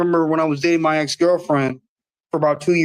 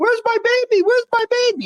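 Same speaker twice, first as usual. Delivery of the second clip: very high, shrill, put-on upset yelling. Imagining how a mother would greet her child's friends: imitating a mother screaming. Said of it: "my mother was gonna scream or yell".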